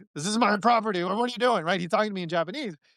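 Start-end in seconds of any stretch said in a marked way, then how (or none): 0.2-1.7 put-on irate, angry, confrontational voice. Retelling a man who found the speaker on his property, imitating an angry man. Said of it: "he sounded angry, and he goes like".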